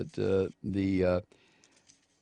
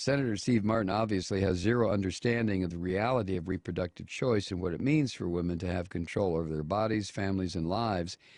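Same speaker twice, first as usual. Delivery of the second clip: ordinary talk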